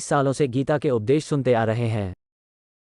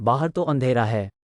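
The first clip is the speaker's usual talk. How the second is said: ordinary delivery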